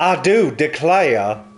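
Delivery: cartoon rooster drawl. Addressing a professor, in a Foghorn Leghorn voice. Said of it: "Foghorn leghorn sounding ass".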